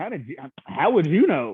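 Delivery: put-on bewildered, puzzled, confused tone. Retelling how another person reacted: imitating a confused question. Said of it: "a confused".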